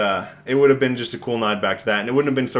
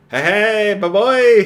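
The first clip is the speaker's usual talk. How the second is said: very high, shrill, loud creature squeal; 10 semitones higher, 7 dB louder than usual. Imitating a creature thrown into the film: imitating a screaming Muppet creature. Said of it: "Muppet creatures that they just threw in that kinda scream".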